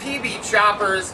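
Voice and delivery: ordinary talk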